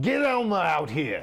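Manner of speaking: loud, high-pitched screaming. Player describes their character screaming while attacking a monster: screaming. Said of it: "I'm screaming".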